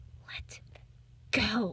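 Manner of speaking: cutting, sharp, hushed, soft whisper. Reading a story, an unseen voice tells the narrator to let go: soft but sharp whisper. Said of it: "A voice, soft but sharp, whispers".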